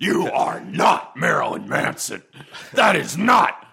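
big, loud, booming, performed delivery. Speaker announces and performs a Worf impression. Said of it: "Here's a Worf impression".

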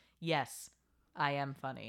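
mock flat delivery. Retelling a scene where Villanelle answers him, imitating Villanelle's deadpan. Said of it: "so deadpan says".

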